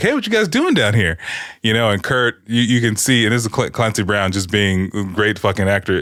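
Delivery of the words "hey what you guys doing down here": very high, innocent, casual voice. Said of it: "he's like".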